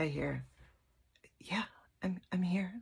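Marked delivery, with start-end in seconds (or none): 1.4-2.7 little, small voice kept small. Retelling a voice the speaker heard in their head: small voice. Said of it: "in a small voice".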